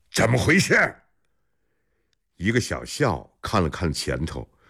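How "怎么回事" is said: hoarse, rasping voice, pitched up. Hearing a commotion in the grain convoy, the lord asks in a hoarse voice. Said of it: "嘶哑着嗓子问".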